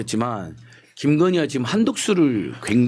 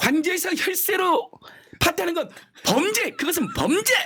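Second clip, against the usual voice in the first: very high, failed put-on shout. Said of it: "흉내가 잘 안 되네".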